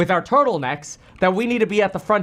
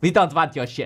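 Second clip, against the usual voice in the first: put-on, low, irritated, angry German accent; 5 semitones lower than usual. Joking about companies offering robots, voicing China's reply in a mock-angry German accent. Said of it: "I don't know why they sound like angry Germans".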